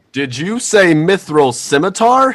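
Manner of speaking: booming, shrill voice, very loud and very high. Narrating a game scene, a voice calls out across the town, booming. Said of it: "A voice comes booming across the town".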